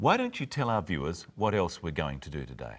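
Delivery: warm, friendly, helpful tone. A show host demonstrates making a suggestion to a co-host, friendly and helpful. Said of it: "make sure that you sound friendly and helpful".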